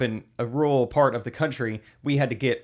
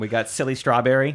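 normal talking voice

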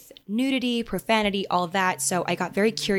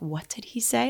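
appalled, embarrassed, mortified, stunned disbelief; 4 semitones higher, 4 dB quieter than usual. Retelling a mother's reaction in the audience: imitating someone mortified.

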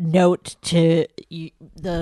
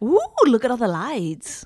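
put-on high, sing-song English girl accent; 6 semitones higher than usual. Playing a girl from England just arrived in the big city: English girl voice. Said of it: "a girl from England".

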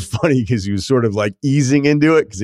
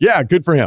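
short, pitched-up brush-off dripping with disdain; 6 semitones higher than usual. Retelling a broadcaster's reply about Saban coming at halftime: imitating Joel Klatt's disdainful tone. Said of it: "The disdain in the voice".

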